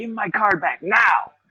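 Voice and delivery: mock furious, irate yell, pitched high. Retelling how he yelled at store staff to return his card: imitating himself yelling. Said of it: "I would start fucking yelling at 'em".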